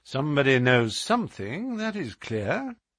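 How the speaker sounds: plain reading voice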